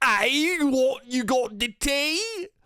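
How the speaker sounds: put-on British accent, high and slow. Showing how americans think british people sound: american take on a british accent. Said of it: "think British people sound like".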